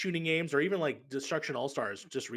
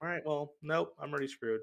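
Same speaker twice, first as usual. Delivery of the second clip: normal talking voice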